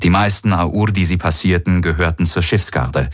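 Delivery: ordinary delivery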